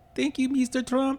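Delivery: put-on speaking with a Venezuelan accent. Making fun of what Venezuelans were saying: put-on Venezuelan accent. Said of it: "using the accent".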